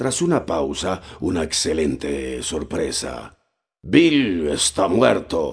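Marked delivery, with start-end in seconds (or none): 3.8-5.5 loud shouted cry, a yell. A voice from inside the inn calls out, shouted. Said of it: "gritó una voz desde el interior".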